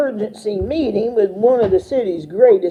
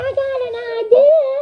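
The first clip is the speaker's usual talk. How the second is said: very high, squeaky, squeaking mouse voice. Narrating a story, voicing the mouse called the big cheese: squeaky mouse voice. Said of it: "I decided to change to my mouse voice".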